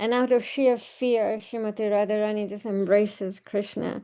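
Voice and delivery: ordinary talk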